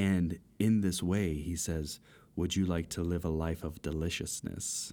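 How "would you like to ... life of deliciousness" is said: put-on super creepy voice, faster pace. Imitating how a man spoke, super creepy voice. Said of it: "A super creepy voice".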